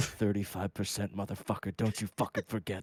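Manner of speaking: whispered voice. Leaning in to the president's ear during a handshake, whispering in ear. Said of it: "I lean in right next to your ear and I whisper".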